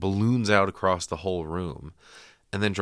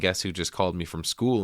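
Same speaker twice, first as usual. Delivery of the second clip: normal talking voice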